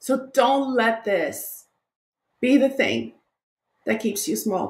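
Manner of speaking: crying while speaking. Encouraging a listener who just made them cry, tearful, crying. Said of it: "you made me cry".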